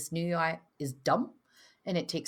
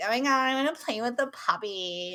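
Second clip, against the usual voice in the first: high, silly, self-mocking put-on voice; 6 semitones higher, 4 dB louder than usual. Retelling wanting to play with a puppy: imitating own mocking voice. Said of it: "you never use that voice".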